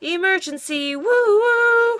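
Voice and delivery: very high, squeaky, squeaked siren noise. Narrator reads Dizzy heading off to the farm to help: squeaky police-siren imitation. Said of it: "squeaked Dizzy, pretending to have a siren".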